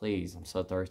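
put-on pleading, begging tone. Retelling begging a doctor for a drink: retelling own pleading. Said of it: "I begged and pleaded with him".

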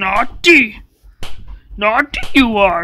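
wise little alien sage voice. Playing an angry old man scolding kids: sounding like Yoda. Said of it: "I sound like Yoda".

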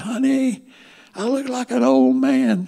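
very high-pitched, loud, drawn-out calling shout. Retelling shouting to his wife from the dining room mirror: imitating himself shouting. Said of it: "I shouted at Mary Ann and said".

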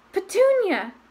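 high, gasping, spoken on the breath. A man reacting to a letter calls out, gasping. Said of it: "he gasped".

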